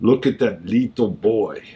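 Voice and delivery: slowed, low Russian accent with rolled r's. An actor rehearsing for a show practices a russian accent. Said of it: "working on my Russian accent".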